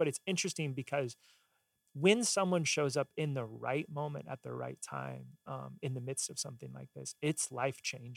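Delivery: voice choking up, with swooping pitch. Telling how someone showing up at the right moment changed things, getting choked up. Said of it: "I'm getting choked up in this".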